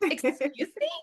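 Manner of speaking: acted-out prim, prissy tone. Retelling a reply to a father asking for a fee: imitating own prissy reaction. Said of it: "I'm very like".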